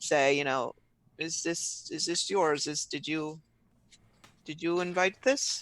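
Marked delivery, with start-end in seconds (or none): 1.2-5.6 hushed, under-the-breath aside. Speaking as Hans to another guest, quietly: under his breath. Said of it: "kind of under his breath so that, but so that he can hear".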